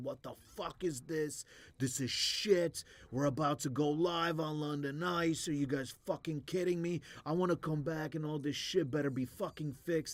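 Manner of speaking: furious, loud, high-pitched angry yelling. Describing a guy yelling at everyone ten days before ice london, imitating a guy yelling. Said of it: "he's just yelling at everyone".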